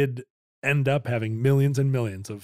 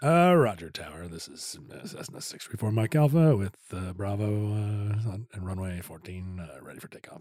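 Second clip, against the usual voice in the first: flat monotone pilot radio voice, much lower; 5 semitones lower, 4 dB quieter than usual. Showing how a pilot calls the tower for takeoff, in a monotone pilot radio voice. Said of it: "a monotone".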